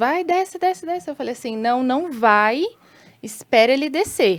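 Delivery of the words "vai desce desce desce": play-acted man's voice, pitched-up hollering yell. Retelling a man yelling at the speaker's stuck son, imitating a man yelling. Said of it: "e ele gritando".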